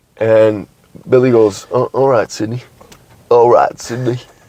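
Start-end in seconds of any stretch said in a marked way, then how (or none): 1.7-4.2 put-on laid-back, relaxed country accent. Retelling a movie scene, quoting Billy's reply to Sydney: Woody Harrelson accent as Billy. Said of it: "just the Woody Harrelson accent, really kind of, uh, laid back".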